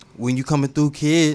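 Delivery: high put-on North Miami Beach accent. Retelling what a woman from North Miami Beach said: imitating a North Miami Beach accent. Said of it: "that really is an accent".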